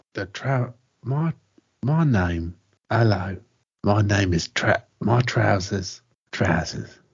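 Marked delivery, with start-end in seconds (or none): 2.8-6.8 put-on London accent, pitched lower. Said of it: "this is Michael Caine".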